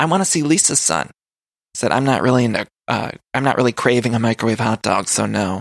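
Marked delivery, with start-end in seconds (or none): 1.9-5.6 put-on dry, sarcastic deadpan, lower pitch. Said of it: "the dry sense of humor on that one".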